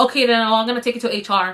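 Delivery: sudden abrupt switch to a curt tone. Retelling a confrontation with Caitlin at work, imitating Caitlin's sudden tone switch. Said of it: "her tone switched so quick".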